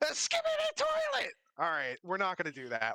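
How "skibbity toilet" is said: shrill, very high goblin yelling voice. Game master voicing a goblin that shouts out, in a shouting goblin voice. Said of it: "the goblin shouts out".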